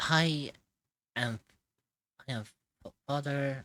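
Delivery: very slow, halting, stumbling false start. Voicing a cleric who stalls while giving his name: hesitant, halting. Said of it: "as he hesitates for a second".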